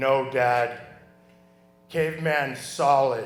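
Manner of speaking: laid-back, cool, deep voice, very slow. Retelling a son answering his dad: imitating Shane's cool deep voice. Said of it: "Shane's signature, coolest deep voice".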